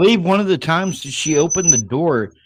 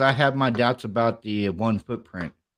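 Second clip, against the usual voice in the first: plain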